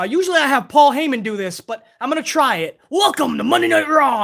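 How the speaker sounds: bashful aw-shucks, shy, blushing delivery. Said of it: "he's like".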